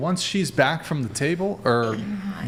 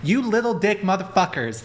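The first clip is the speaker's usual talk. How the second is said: put-on high-pitched, disrespectful girl's voice; 5 semitones higher than usual. Retelling what a girl said in the heat of the moment, doing an impression of her. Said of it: "Is that your impression of her?".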